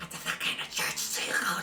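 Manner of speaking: slimy, oily, slithering voice. Voicing a presence speaking in a character's mind: slimy, slithery voice. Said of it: "a slimy, slithery voice says in your mind".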